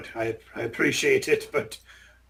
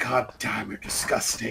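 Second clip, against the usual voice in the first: soft, grumbled mutter under the breath; 4 semitones lower, 5 dB quieter than usual. Voicing a character disgusted by a goblin: muttering under his breath. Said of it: "mutters under his breath".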